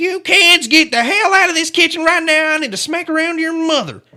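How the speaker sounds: shrill, very high-pitched, loud yell. Imagining how Cecil, a yeller, sounded, imitating Cecil's high-pitched yell. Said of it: "He just had like the high pitch".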